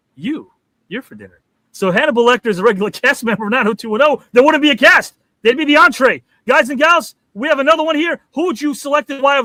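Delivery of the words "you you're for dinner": low, soft, completely deadpan delivery. Imagining a cast asked what's for dinner, the speaker answers as Hannibal Lecter: deadpan. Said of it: "he would just deadpan and go".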